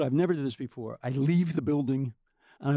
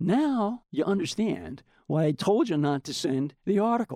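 mock cool, unbothered, smug tone, raised pitch; 5 semitones higher than usual. Retelling what someone said after a tense phone call, imitating someone speaking nonchalantly. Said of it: "he's just nonchalant".

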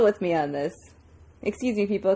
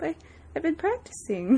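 acted, high-pitched, mopey, dejected sad voice; 8 semitones higher, 4 dB quieter than usual. Retelling a character's line about practicing, imitating a sad complaint. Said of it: "I love how sad he is".

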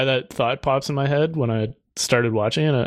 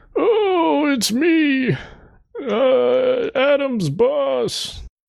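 put-on elderly old man voice; 13 semitones higher than usual. Playing someone's boss in a casual chat, in a put-on old man voice. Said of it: "I can do an old guy voice".

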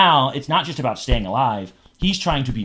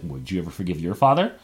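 put-on menacing voice, lower pitch; 6 semitones lower than usual. Speaker recaps a scene, quoting Pan's question: mock-menacing Pan impression. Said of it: "the way Pan just says it so menacingly".

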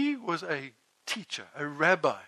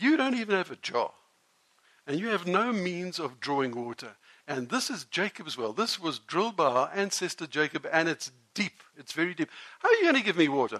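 ordinary talk, nothing marked

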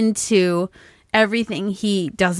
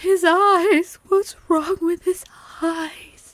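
high, slow, horrified crying out. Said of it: "she goes".

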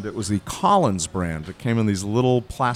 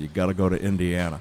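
normal talking voice

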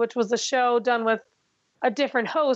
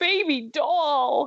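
thick, heavy, fake New York accent; 2 semitones higher than usual. Imitating a contestant's catchphrase: thick Fred Armisen fake New York accent. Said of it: "thick Fred Armisen fake New York accent".

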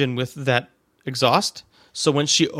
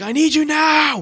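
put-on yell, very high and drawn out; 13 semitones higher than usual. Retelling how she called for the speaker from the kitchen: retelling her yell. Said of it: "I hear her just yell for me".

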